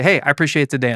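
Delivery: normal talking voice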